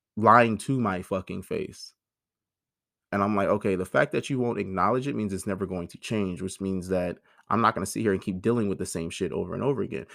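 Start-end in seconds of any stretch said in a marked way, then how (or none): none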